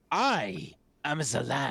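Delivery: words stretched out, pitched high. Voicing a figure who yells at the players: yelling in character. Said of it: "he now kinda yells".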